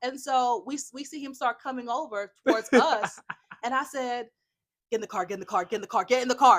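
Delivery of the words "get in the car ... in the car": mock dead-serious, low and rattled out rapidly. Retelling urging the others into the car as a man approached, retelling a dead-serious order. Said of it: "just like as serious as".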